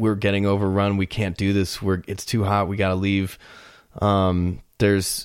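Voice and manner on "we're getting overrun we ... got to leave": ordinary talk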